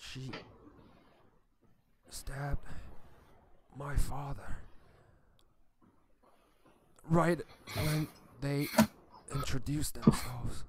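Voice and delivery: strained, struggling character voice. A game master voices Alethea as she is led to the front: Alethea, struggled voice. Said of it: "a really struggled voice".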